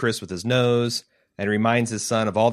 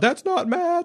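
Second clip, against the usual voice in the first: mock, very high, wailing cry. Retelling a character's reaction to the news: imitating wailing. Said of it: "she starts wailing about".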